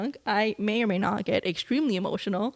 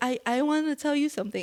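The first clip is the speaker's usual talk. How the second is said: high, teary, mumbled drunk talk, put-on; 6 semitones higher than usual. Speaker retells telling someone something while drunk: imitating mumbling and crying. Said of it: "I'm mumbling and crying".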